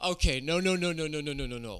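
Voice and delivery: put-on frantic pleading. Retelling being scared as a child, imitating own childhood panic. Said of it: "And I was like".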